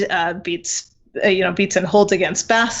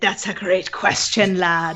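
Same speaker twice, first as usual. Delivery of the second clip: put-on pirate captain voice. Repeating an earlier reply to a question: pirate voice. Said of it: "you couldn't hear my pirate voice".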